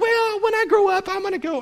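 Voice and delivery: put-on very high, sneering, taunting girlish voice. Quoting students who put off going to church, mimicking them: mock girly voice. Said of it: "I make it all sound like a girl".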